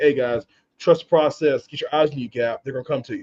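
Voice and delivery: ordinary talk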